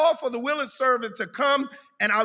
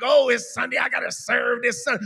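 mock-annoyed put-on grumbling. Describing the attitude the speaker does not bring to serving on sunday, mock-annoyed grumbling. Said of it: "I don't come in here mad and like".

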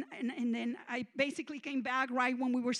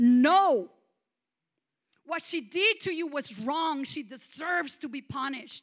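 put-on deity voice turning loud, angry, final; 3 semitones higher, 8 dB louder than usual. Retelling god slamming his throne armrest and refusing: angry refusal. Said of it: "slamming the armrest of his throne and saying".

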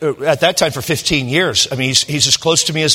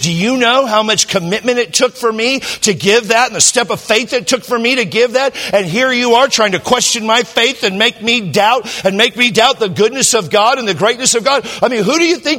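put-on high, tearful, weeping, wounded crying outburst; 8 semitones higher than usual. Pastor retells a man's tearful outburst at him, imitating Bernie crying. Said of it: "he's crying".

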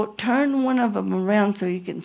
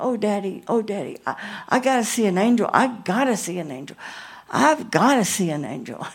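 put-on weepy, tearful, begging cry. Retelling begging a father as a child to see an angel: imitating a crying plea. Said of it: "I started crying".

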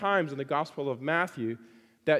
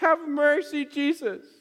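put-on very high, loud, anguished desperate cry; 11 semitones higher, 5 dB louder than usual. Retelling a mother's cry to Jesus for her possessed daughter, retelling a desperate plea. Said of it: "the desperation that she felt".

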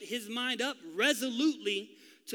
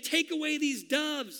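put-on furious cry, pitched high, at the top of lungs; 5 semitones higher than usual. Retelling Jesus pulling the animals out: imitating screaming at the top of lungs. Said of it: "he's screaming at the top of his lungs".

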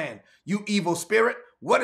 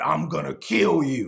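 threatening, menacing male voice; 4 semitones lower than usual. Retelling how a woman spoke while you declared Jesus' name: a man's voice from a woman. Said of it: "a man's voice came out of her mouth".

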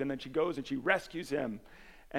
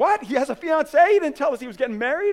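acted very high, very loud, shrill, frantic, panicked disbelief; 12 semitones higher, 13 dB louder than usual. Retelling a hospital scene, speaker acts out the family learning of a fiance, mock-panicked disbelief. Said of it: "they're all panicking and all upset".

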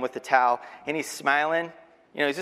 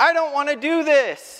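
acted very high, shrill, loud small-child yell; 13 semitones higher, 6 dB louder than usual. Retelling what a three-year-old yells at swimming lessons: imitating a child yelling. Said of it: "he immediately starts yelling".

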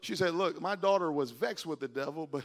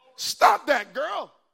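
shrill, very loud, high-pitched scolding yell; 10 semitones higher, 10 dB louder than usual. Preaching, acting out a mother scolding her daughter: raised voice scolding. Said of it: "Tried to raise my voice at my daughter".

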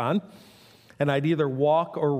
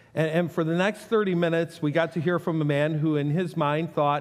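ordinary talk, nothing marked

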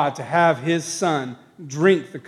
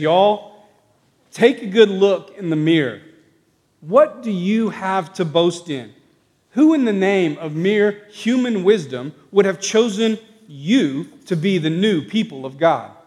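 put-on good, convincing Southern accent; 3 semitones higher than usual. Retelling Paul's next argument, in a southern accent. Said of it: "In his good southern accent".

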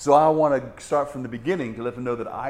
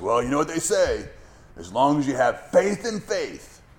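mock, faintly big-voiced booming delivery. Retelling what a talkative recovering alcoholic said to him, in a booming voice. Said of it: "he says in this booming voice".

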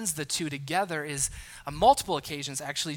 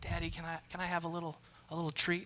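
mock-sweet put-on voice, quieter; 9 dB quieter than usual. Acting out a child asking daddy for a treat, imitating a sweet voice. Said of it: "ask in that sweet voice".

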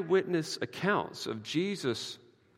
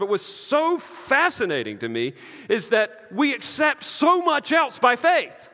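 angry preaching tone, high, loud, slow, exasperated. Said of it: "I'm sorry, I sound angry".

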